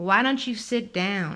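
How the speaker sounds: put-on nasal voice with Southern accent. Reading a novel aloud, a man in a bar calls to the narrator; nasal southern voice. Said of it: "the man called to me in a nasal southern voice".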